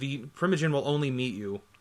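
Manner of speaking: usual speaking voice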